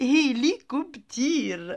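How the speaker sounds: hélicoptère in Arabic, drawn out slowly through laughter.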